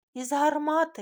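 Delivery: very loud, high, gleeful, joyful shout. A girl in a group suddenly beams and shouts joyfully across the room. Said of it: "радісно вигукнула вона на всю кімнату".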